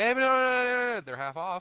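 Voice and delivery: very high voice, "uh" drawn out long. Retelling what a server said when ordering a slushie: imitating someone talking too fast. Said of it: "she spoke a bit too fast".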